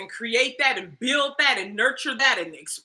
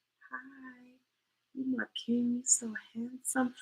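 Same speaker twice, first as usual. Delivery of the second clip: put-on feminine voice, shallow breath, much quieter; 12 dB quieter than usual. Showing how a feminine woman talks, shallow-breath feminine voice. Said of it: "how much I'm shallowing my breath to do that".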